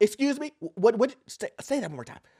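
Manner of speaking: stumbling, tripping over the words. Acting out an IRS agent reacting to a TikTok video: imitating an IRS agent. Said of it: "the I R S agent is like".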